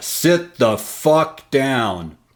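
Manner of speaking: commanding, authoritative, barked-out voice. Recounting ordering a man heading for the stage to sit, retelling an authoritative command. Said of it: "in my most authoritative voice".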